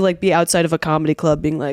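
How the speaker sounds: usual speaking voice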